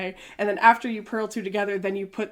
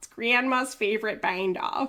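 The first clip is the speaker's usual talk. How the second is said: put-on, very strong Wisconsin accent. Repeating a knitting video's line: imitating a very Wisconsin accent. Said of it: "in a very Wisconsin accent".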